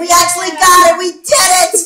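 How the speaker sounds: shouting with excitement. Reacting to finally getting a longed-for gift: excited shouting. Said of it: "I can't stop shouting about it!".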